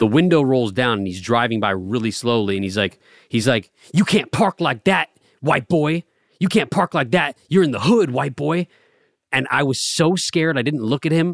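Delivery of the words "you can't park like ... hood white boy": mock taunting call, shouted out loud. Retelling what a passing driver shouted at him, imitating the shouting. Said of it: "he kept shouting at me".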